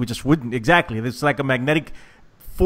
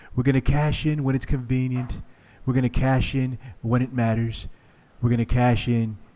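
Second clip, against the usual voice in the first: put-on politician voice, whispered and quieter; 6 dB quieter than usual. Making a match prediction, whispering: whispered Donald Trump impression. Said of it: "That's my Donald Trump impression".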